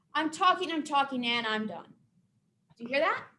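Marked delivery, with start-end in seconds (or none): 0.1-1.9 statement tune with pitch falling on done. Teaching how pitch rises and falls in speech, demonstrating falling statement intonation. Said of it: "my voice is gonna go down".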